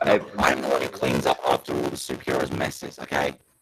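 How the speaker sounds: strangely altered, distorted, warped voice. Saying a line about cleaning up after superheroes: distorted voice. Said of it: "What the hell happened to your voice?".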